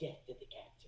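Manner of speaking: hushed, secretive, conspiratorial whisper. Leaning in by a fire to another character: quiet conspiratorial voice. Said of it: "I lean in real quiet and I just look".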